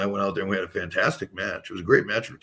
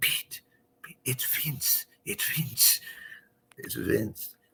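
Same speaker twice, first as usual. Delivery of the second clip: put-on Portuguese accent, much quieter; 4 semitones higher, 5 dB quieter than usual. Recounting his mom knocking on his bedroom door after he crashed: imitating mom's Portuguese accent. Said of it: "she's Portuguese, so she has an accent".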